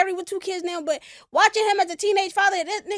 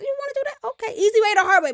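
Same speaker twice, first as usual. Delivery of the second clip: firm, laying-it-down dad voice; 2 semitones higher than usual. Quoting what a dad always used to say when parenting: imitating his dad. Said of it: "My dad always would say that".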